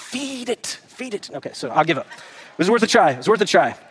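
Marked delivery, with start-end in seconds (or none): 0.0-1.3 very slow, whispery, put-on Scottish commercial-style voice. Imitating the Scotsman from a commercial: Scotsman from the commercial impression. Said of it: "the Scotsman on the commercial that says".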